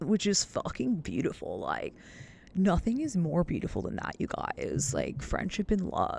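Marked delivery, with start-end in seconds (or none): 0.0-1.6 put-on high-sounding delivery. Repeating own words after noticing they sounded high: mimicking sounding high. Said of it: "I just sounded so high".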